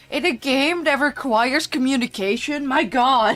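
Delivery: mock voice full of disappointed, let-down disbelief. Retelling another player's reaction to someone speaking Dutch: imitating Silver's disappointment. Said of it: "Just the disappointment of Silver being like".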